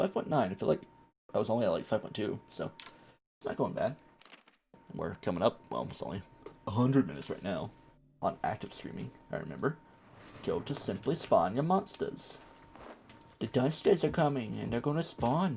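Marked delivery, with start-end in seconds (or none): 10.4-15.6 weird, vague, loosely held put-on English or Irish accent. A streamer talks through spawning monsters in a weird, half-committed English or Irish accent. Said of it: "going for a weird type of English voice, like Irish or something".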